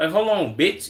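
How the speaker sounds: ordinary talk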